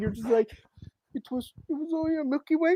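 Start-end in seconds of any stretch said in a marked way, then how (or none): 1.1-2.8 put-on high, coy, sheepish child voice. Imitating the other speaker as a child caught stealing candy: imitating a coy child caught stealing candy. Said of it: "like a child who I caught".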